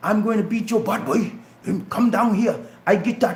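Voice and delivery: put-on Georgia coastal Sea Islands accent. Showing how he used to talk: imitating his old Geechee accent. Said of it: "I used to talk like".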